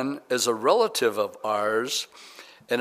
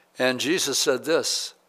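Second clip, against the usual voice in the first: plain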